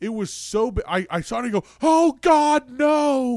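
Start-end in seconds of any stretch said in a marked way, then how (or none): 1.8-3.4 very loud, high, panicked, terrified shriek. Retelling the moment they saw it before Cody ran over, reenacting a terrified scream. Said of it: "We were just screaming".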